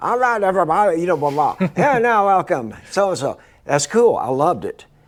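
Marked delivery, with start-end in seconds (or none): 0.0-3.4 put-on broad, thick New England accent, raised. Recalling the man running a Boston club introducing acts, speaker does Bob Donlan's thick New England accent. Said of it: "thick New England accent".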